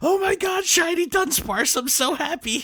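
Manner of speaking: put-on thrilled, very high-pitched, gushing super excitement. The speaker reads out a message someone sent, retelling it with excitement. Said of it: "this is how I read it in this with this level of excitement".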